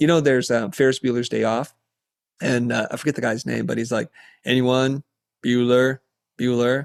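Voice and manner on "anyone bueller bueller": monotone teacher voice. Showing how people see teachers, as the monotone Ferris Bueller's Day Off teacher. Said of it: "It's like monotone".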